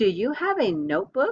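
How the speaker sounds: rising question intonation on notebook. Modeling a sentence ending in a question mark for learners to repeat; question intonation. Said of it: "listen to how our voice changes".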